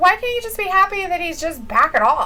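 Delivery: ordinary delivery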